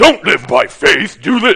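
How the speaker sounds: loud, sinister tempter voice. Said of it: "That's my best impression of Satan".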